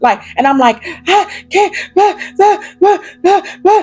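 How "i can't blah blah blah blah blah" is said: put-on panicked hyperventilating, breathless. Retelling trying to speak on the phone: imitating own hyperventilating. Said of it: "I'm hyperventilating".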